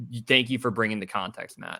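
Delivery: ordinary talk, nothing marked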